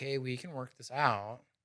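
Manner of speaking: very soft, hushed, calm, easygoing reassurance. Explaining how tone affects people's response, demonstrating a calm, non-aggressive tone. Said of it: "But if your tone is like".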